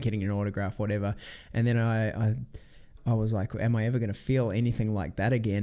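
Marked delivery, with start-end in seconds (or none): none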